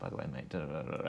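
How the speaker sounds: very soft, very quiet, private under-the-breath whisper. Showing how a friend whispers during photo shoots: imitating someone whispering. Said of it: "He'll whisper things at you".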